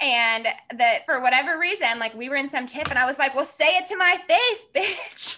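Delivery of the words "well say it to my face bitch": tough-talking, high, hard-acting yell. Recalling being eighteen at work, retelling a yell at a coworker. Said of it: "I just remember yelling at this coworker".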